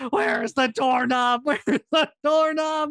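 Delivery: play-acted, frantic, blind panic, very high-pitched. Retelling being stuck in a closet, the speaker acts out their past blind panic. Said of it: "I'm in a blind panic".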